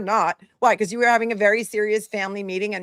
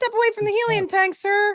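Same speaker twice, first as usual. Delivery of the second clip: put-on very high, childlike little-kid voice; 12 semitones higher than usual. Imitating how he talks, mocking him: imitating his childlike voice. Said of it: "And then he talks like this".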